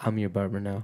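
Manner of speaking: soft, close, hushed half-whisper near the ear. Retelling what a barber half-whispered in the ear: imitating someone half-whispering. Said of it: "he whispers in my ear".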